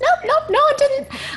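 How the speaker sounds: incredulous, mocking, very high, sing-song.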